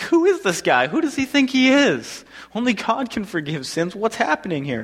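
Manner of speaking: loud, exasperated, protesting tone. Retelling how the table guests react to Jesus forgiving sins, mock-exasperated. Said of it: "You can hear like the exasperation in their voice".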